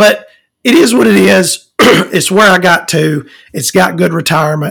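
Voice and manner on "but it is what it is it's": words giving way as the voice cracks and breaks. Speaker reflects on where they ended up: voice breaking. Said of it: "My voice is breaking".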